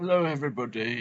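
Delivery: silly put-on British voice. Greeting everybody at the start: stupid British voice. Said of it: "that stupid fucking British voice".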